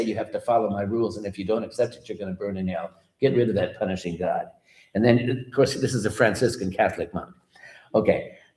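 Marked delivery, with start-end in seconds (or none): none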